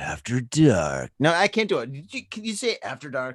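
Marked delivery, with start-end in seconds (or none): 0.0-1.1 very deep, low porn narrator voice-over. Trying out a voice for saying the show's segment name, like reading porn. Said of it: "I sound like I'm fucking reading like porn".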